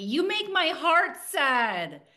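put-on high, drawn-out small child yell. Telling the host about her three-year-old daughter this morning, retelling a child's yelling. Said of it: "She was yelling at me".

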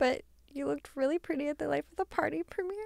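moved, full of feeling. Speaking to someone about her film premiere, getting emotional. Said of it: "I'm getting emotional".

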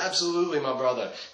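put-on English spoken Brazilian-accented. Retelling Renzo Gracie agreeing to sign the speaker's portrait, Renzo Gracie's Brazilian accent. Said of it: "Brazilian accent".

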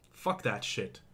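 angry, hushed, dismissive whisper. A speaker vents to viewers about being pushed aside, angry. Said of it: "I'm sorry I'm angry right now".

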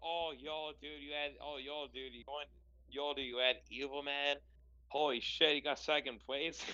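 ordinary talk

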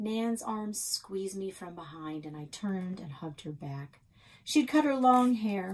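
ordinary delivery, nothing marked

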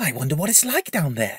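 whispering. Reading a story aloud, voicing a character's line, whispered. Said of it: "Kokkariki whispered".

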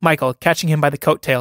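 ordinary delivery

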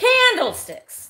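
very high, loud, shrill blurted call. Announcing the next item for sale: loud. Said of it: "that was loud".

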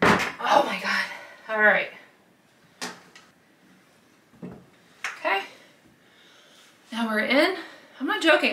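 out of breath. Finally getting a stubborn hoop in, talking to viewers: out of breath. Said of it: "I am out of breath".

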